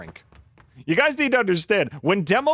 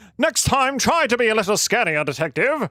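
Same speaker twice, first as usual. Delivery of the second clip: put-on British accent, pitched higher; 3 semitones higher than usual. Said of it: "he sounds British?".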